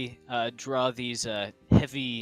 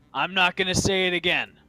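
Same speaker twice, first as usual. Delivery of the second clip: loud booming voice, much higher pitch; 6 semitones higher, 6 dB louder than usual. In an acted scene, a character repeats a warning, loud booming voice. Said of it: "with the loud booming voices".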